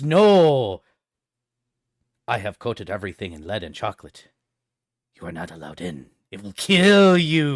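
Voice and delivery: loud, menacing, threatening voice with long drawn-out "no". Voicing a character who grapples the listener and holds them in place, in a menacing voice. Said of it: "he says in a menacing voice".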